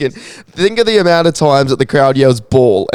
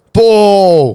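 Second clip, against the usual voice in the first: crowd-style yell, much higher and louder; 5 semitones higher, 4 dB louder than usual. Asked for an example of a crowd's cheer, giving a crowd-style yell. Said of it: "Just just yell it".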